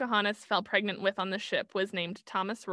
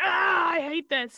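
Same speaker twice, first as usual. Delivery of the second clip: mock fed-up, exasperated, angry, loud and drawn out; 8 semitones higher, 6 dB louder than usual. Retelling a day of research over coffee: imitating own angry outburst. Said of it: "angrily drinking coffee".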